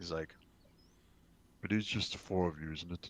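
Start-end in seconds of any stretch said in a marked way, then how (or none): 1.6-3.1 slightly deeper, quieter voice. A storyteller voices a character confronting the party, voice a bit deeper. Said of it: "his voice gets a little bit deeper".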